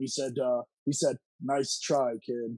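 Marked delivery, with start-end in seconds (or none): 1.4-2.6 low, menacing, intimidating voice. Retelling what Loki said walking past after the hit, imitating Loki's intimidating low voice. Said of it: "It's a real, real intimidating low voice".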